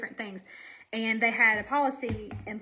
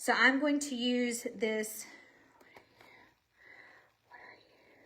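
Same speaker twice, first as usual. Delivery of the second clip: winded, out of breath. Speaker choosing a makeup color during a tutorial, still out of breath. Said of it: "I'm still out of breath".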